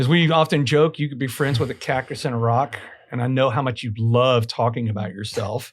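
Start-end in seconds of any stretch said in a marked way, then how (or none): none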